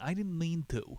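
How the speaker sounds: put-on high, heavily laid-on Italian accent. Telling of Louis questioned by SS guards, the speaker gives his line in Louis's Italian accent. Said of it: "He lays into his Italian accent".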